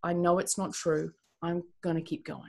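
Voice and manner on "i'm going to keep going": ordinary talk, nothing marked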